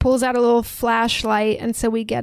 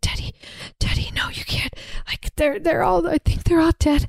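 breathy, tearful whisper through crying; 6 semitones higher than usual. Retelling a horror film scene, imitating crying and whispering. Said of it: "crying and whispering".

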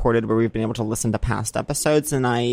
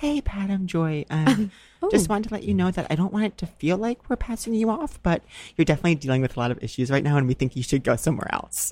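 lovely, gorgeous, pitched-up phone voice; 6 semitones higher, 4 dB quieter than usual. Retelling a phone call from Joy about therapy, imitating Joy's gorgeous voice. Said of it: "gorgeous voice".

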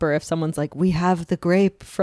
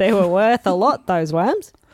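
put-on Aussie accent with Australian vowels; 3 dB louder than usual. Retelling a story about a tour guide in australia, in an australian accent. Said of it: "That's a good accent".

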